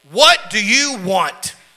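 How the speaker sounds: very severe, challenging tone. [name], the innkeeper, opens the door to Joseph; very stern. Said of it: "very sternly".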